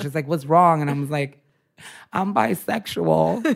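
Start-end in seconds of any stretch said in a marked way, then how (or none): 2.1-3.4 acted, high-pitched, tearful crying voice. Retelling coming out at 3 a.m. on the couch, retelling crying while confessing. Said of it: "I'm like crying on the couch".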